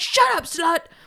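put-on hostile, rude, aggressive tone. Retelling a scene's rude line: imitating an aggressive outburst. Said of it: "that was so fucking aggressive".

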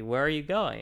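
bossy high-pitched yell. Retelling how the employer yelled at them for leaving: imitating someone yelling. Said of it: "they yelled at me".

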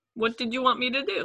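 put-on speaking with Russian accent. Recounting Ovechkin's reply after he hurt someone, in Ovechkin's Russian accent. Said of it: "saying it in his Russian accent".

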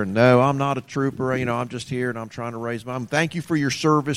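put-on southern boy accent, Florida panhandle style. Imitating older men from the Florida panhandle, in a southern accent. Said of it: "they talk like this here".

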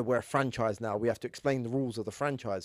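usual speaking voice

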